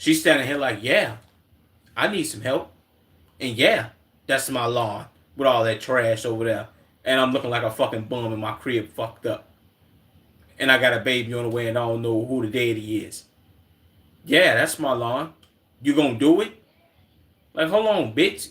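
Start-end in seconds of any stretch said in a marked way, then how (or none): 0.8-16.5 deep, bassy, demanding voice. Retelling a woman asking for lawn help: imitating her with bass in voice. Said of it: "too much bass in her voice for her to be asking".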